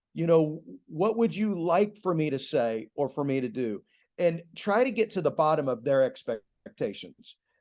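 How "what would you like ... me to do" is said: normal talking voice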